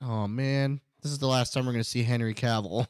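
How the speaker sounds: ordinary delivery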